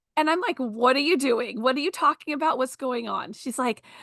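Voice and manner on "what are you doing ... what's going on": normal talking voice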